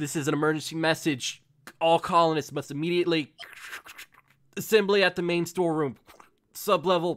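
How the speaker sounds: loud, static-crackled intercom announcement through crackling speaker. Narrator voicing an emergency message heard over a hallway intercom, static-obscured intercom message. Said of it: "slightly obscured by static".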